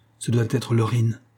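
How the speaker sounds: plain reading voice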